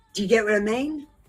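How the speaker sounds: normal talking voice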